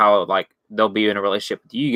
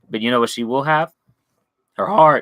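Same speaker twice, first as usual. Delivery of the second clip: cracking voice; 3 semitones higher than usual. Speaker giving advice to listeners, voice cracking. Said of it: "my voice cracked right there".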